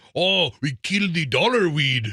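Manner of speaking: bad fake Scottish brogue, terribly put-on. Recalling the Scotts commercials to the others, in a terrible Scottish accent. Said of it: "that's a terrible Scottish accent".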